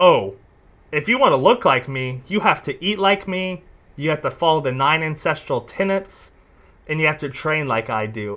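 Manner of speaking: ordinary talk, nothing marked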